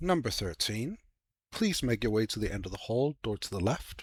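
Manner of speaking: relaxed, unraised, calm, soft announcer voice. Game master voicing a mysterious voice summoning the players, in a relaxed unraised voice. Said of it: "speaking at a common but relaxed tone".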